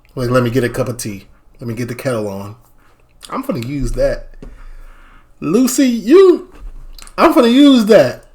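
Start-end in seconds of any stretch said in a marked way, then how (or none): 0.3-2.6 low, flat, emotionless deadpan delivery. Acting out a reply to someone who comes in crying: acting emotionless. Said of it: "with no emotion".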